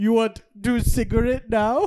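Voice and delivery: terrible fake Swedish accent. Retelling a story about Sven, the speaker imitates Sven's terrible Swedish accent. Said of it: "I feel like that's German now".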